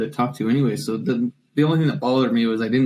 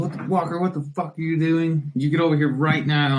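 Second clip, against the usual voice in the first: put-on angry yell, higher; 4 semitones higher than usual. Speaker imitates a man fresh out of Afghanistan calling him over, imitating an angry yell. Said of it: "He's kind of an angry, angry man".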